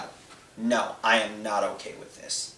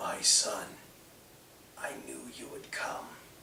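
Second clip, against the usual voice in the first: feeble, barely-there, very quiet near-whisper; 11 dB quieter than usual. Narrating, voicing King Andon answering his son Colin: weak King Andon voice. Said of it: "in a weak voice".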